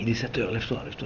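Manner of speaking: soft, almost under breath.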